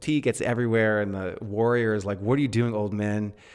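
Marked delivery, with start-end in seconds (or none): none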